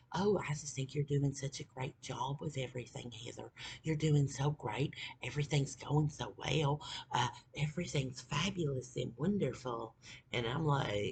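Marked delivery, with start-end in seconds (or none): 0.1-9.9 put-on sugary, soothing, gushing fake sweetness. Retelling how the boyfriend gaslit her when she was mad: imitating a gaslighting boyfriend. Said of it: "he would, like, always, like, gaslight".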